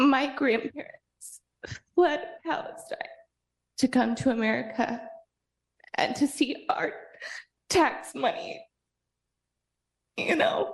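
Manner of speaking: voice catching and breaking. A speaker addresses the city council during public comment, emotional. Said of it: "I get emotional. Sorry".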